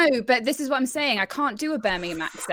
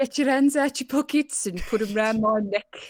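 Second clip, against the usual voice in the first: imitated coach voice. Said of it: "I'm doing the voice of my brother's old rugby coach".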